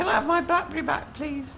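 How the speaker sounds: put-on, very high-pitched lady's voice. Asked to request the BlackBerry back like a lady, in a lady's voice. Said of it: "in a lady's voice".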